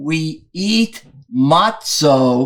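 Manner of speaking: slow, drawn-out cadence with stretched intonation. Quoting the other speaker's joke line back to him, slow rabbi-style delivery. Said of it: "It was slower, and the slowness made it funnier".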